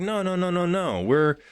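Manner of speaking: high, loud, rapid mock protesting. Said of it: "You're like".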